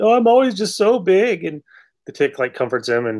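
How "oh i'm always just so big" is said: high, weepy voice, talking through sobs. Retelling a whale character's words at an orientation: imitating someone crying. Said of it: "he starts crying like".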